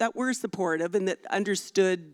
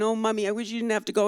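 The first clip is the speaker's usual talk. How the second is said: mock tearful, crying little-child voice, pleading; 4 semitones higher than usual. Retelling the little one crying before a Paris trip: imitating Joey crying. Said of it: "the little one, Joey, was crying".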